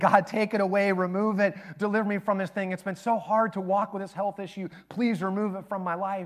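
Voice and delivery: imploring, pleading voice. Speaker acting out a biblical figure pleading with God: acting out begging. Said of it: "like he's begging".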